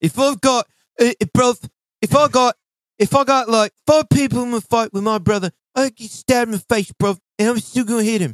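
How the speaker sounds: high, loud, bad mock British accent.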